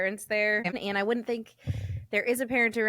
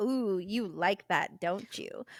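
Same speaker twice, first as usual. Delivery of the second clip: sleazy, creepy, insinuating tone; 4 dB quieter than usual. Retelling what the tattooer said as the speaker dozed off: imitating a creepy tone. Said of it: "if he didn't say it in a creepy way".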